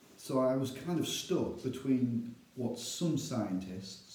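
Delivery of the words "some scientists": "some" emphasized, slowed, with heavy stress. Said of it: "I emphasize the word some scientists".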